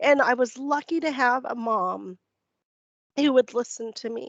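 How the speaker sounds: teary, emotional voice. Speaker recalling hard memories of a painful time, teary. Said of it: "I get really teary about this".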